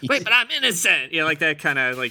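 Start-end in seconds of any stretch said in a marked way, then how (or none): 0.1-1.1 put-on very high sixteen-year-old teen kid voice. Show how he says it in the lyrics, imitating a 16-year-old kid in Indiana. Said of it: "He kind of says it like a 16-year-old".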